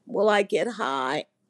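tiny little voice. Recounting a very sick woman's question, imitate her: imitating her little voice. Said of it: "she says in this little voice".

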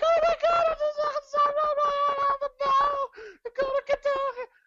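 sudden, very high, loud, squeaky voice. Retelling passing someone on the stairs while on the phone: voice jumping two octaves up. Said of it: "my voice jumps up, like, 2 octaves".

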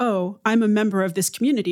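normal talking voice

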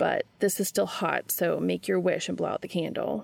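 plain

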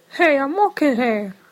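very high-pitched delivery. Delivering a requested movie line: Ratso Rizzo line read. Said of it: "to give us that line read".

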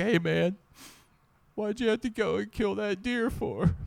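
high, emotional protesting tone. Retelling what the guy in the back seat piped up with, imitating him emotional. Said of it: "he was all emotional".

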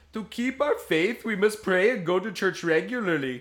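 put-on Indian accent. Reading a quote from an AI-generated avatar to churchgoers, in a bad Apu accent. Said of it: "It did go a little Indian".

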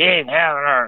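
low, gruff character voice. Speaker quotes what Alpha says when he first comes for her, gruff voice. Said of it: "It was that gruffy voice".

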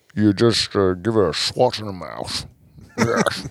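imitated Scottish accent. Doing a Sean Connery impression: Sean Connery voice. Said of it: "You're really good at these voice analogies".

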